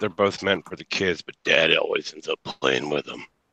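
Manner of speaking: lecherous, sleazy, pervy voice. Answering another character's riddle, delivering the punchline in a perverted voice. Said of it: "I love it when you do that perverted voice".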